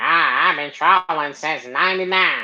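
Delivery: put-on wheezy, out-of-breath, parrot-like old-man voice. Mimicking a man who uses a breathing machine, dying-parrot voice impression. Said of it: "he sounds like a damn parrot getting ready to take his last breath".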